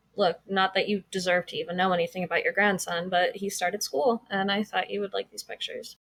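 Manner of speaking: usual speaking voice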